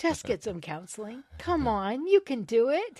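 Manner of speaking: put-on loud yelling. Retelling urging a tv character to get help: imitating yelling at the tv. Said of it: "yelling at my T V".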